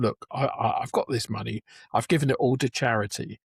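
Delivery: ordinary talk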